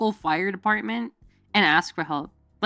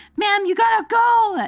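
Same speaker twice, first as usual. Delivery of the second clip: shrill, very high yelled screaming; 13 semitones higher, 4 dB louder than usual. Telling a fire alarm story, the speaker quotes the firemen: retelling firemen screaming. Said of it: "the firemen like screaming at me like".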